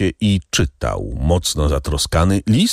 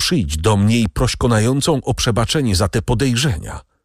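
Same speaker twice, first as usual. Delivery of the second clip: ordinary delivery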